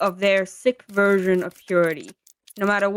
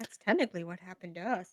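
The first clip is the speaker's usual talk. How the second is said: quiet mumbling under breath, growing quieter; 13 dB quieter than usual. Voicing a character who speaks up about the king: mumbling under her breath. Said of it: "she does mumble this under her breath".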